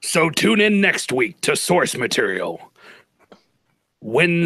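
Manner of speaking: put-on, dramatic movie-style voice. Asked to close out an episode of Source Material, in a movie voice. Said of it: "take us out of here in a movie voice".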